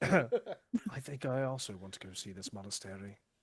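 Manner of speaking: slow, put-on British accent, back in place. Answering after being reminded of the character's accent: British accent. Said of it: "didn't you have a British accent?".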